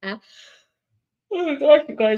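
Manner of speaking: words stretched by yawning. Speaker apologizes to the group after an early morning: yawning. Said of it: "I'm sorry, I'm yawning".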